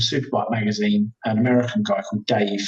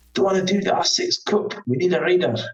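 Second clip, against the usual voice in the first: put-on higher Scottish accent; 8 semitones higher than usual. Retelling a phone call from Kenny Pride asking for a reader, in Kenny Pride's Scottish accent.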